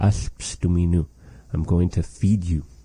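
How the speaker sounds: ordinary delivery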